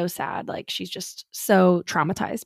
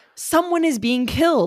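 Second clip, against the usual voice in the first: desperate, frantic, high, panicked begging; 8 semitones higher, 4 dB louder than usual. Retelling a neighbor's call to police: imitating a panicked, desperate caller. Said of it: "she is panicked and she is desperate".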